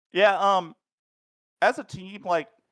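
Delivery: very high, loud, with a mouth full of food. A racer answering a question about Talladega strategy, talking while eating. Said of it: "sorry, finishing eating something".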